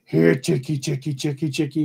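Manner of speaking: put-on rough, gravelly creature voice. Telling of a voice calling from the woods to a man feeding chickens, gravelly creature voice. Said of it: "he hears a gravelly voice from the woods go".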